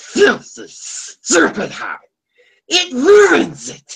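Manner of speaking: very high, slow, drawn-out swooping voice. Repeating the impression for a listener who missed it: Smeagol voice. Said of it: "That's pretty good".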